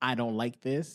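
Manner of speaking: ordinary talk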